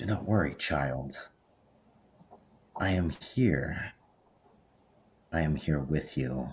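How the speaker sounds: unsettling, creepy, eerie feminine voice. Voicing the creepy woman from the Night Realm speaking inside a mind: creepy woman's voice. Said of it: "it was the creepy woman".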